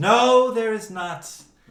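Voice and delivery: very high, loud, stretched, shrill scream. Voicing a character answering whether there is a tentacle: screaming. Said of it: "And Lyastra screams".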